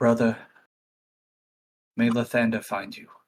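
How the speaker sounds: soft, hushed half-whisper. In a tabletop game, a character leans down and speaks to it, half-whispering. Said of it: "whisper to it and say".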